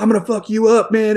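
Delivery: play-acted, all-out, loud, high-pitched yelling. Recounting standing in for another actor on set: retelling a yell. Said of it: "I'm just like yelling at him".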